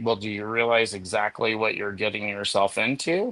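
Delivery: ordinary delivery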